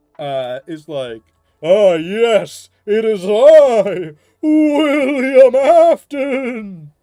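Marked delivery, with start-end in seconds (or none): 1.7-6.8 very high, loud, very slow dumb voice, "I" stretched. Showing the others a goofy William Afton voice. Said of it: "my Dumbest William".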